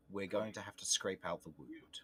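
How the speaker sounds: hushed, confidential stage whisper. A game master voices a character leaning close to Romulus, in a hushed voice. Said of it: "in a hushed voice".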